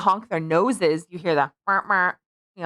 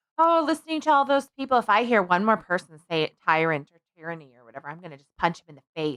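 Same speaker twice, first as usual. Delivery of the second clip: ordinary talk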